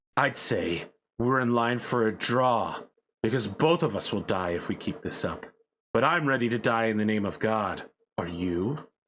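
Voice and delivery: spoken through clenched teeth. Voicing a bleeding pilot who offers a draw: through gritted teeth. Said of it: "And he's gritting his teeth".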